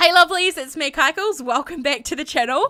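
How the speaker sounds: high voice broken up by laughter. Video creator greets channel viewers: laughing while talking. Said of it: "I'm actually laughing".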